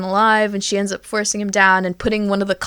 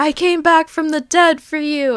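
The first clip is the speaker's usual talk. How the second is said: high-pitched fake weepy sobbing; 7 semitones higher than usual. Retelling a woman's dramatic entrance to someone: fake crying. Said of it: "And like fake crying".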